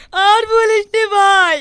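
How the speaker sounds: wailing, sobbing loudly.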